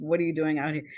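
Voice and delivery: play-acted alarmed tone, almost panicky. Retelling a mother's question to a brother on the porch: imitating mother's panicked question. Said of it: "a note of kind of almost, uh, panic".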